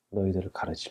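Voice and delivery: hushed, unvoiced whisper.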